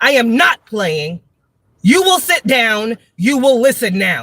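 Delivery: stern, firm, commanding no-nonsense voice. Demonstrating how to talk to misbehaving children, in an authoritative voice. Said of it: "This is how I talk to them".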